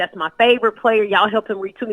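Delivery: ordinary delivery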